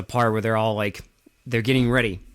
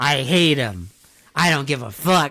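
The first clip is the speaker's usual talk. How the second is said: mock crazed, unhinged ranting, higher pitch; 4 semitones higher, 4 dB louder than usual. Retelling a movie scene where a character rants: imitating an unhinged rant. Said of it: "he goes on this rant".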